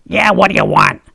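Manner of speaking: put-on heavy New Jersey accent. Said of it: "in a big Jersey accent".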